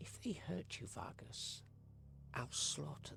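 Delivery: close, hushed whisper into the ear. Storyteller voices a character who leans in to a player: whispering in your ear. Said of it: "He just whispers in your ear".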